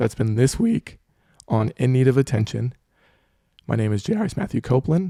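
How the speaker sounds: voice cracking and breaking. Host signing off this week's In Need of Attention, voice cracking. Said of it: "My voice is cracking".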